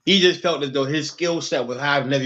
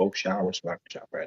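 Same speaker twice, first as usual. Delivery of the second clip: sinister villain-like voice, much lower and quieter; 7 semitones lower, 9 dB quieter than usual. Talking to someone in the room, sounding like an evil villain. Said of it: "You sound like an evil villain just now".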